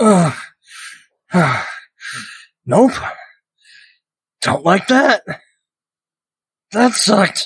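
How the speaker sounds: high, strained groans of pain.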